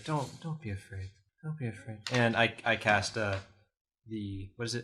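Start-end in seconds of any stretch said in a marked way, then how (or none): 0.0-2.0 soft, hushed half-whisper, close to the ear. Comforting a frightened character in a game, half-whispering in his ear. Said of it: "I whisper in his ear".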